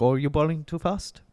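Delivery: put-on Indian accent. Retelling what a cricketer said to the bowler Stark, in a Jaiswal impression with an Indian accent. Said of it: "Shouldn't do the accent".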